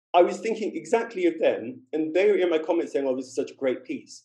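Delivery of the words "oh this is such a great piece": ordinary talk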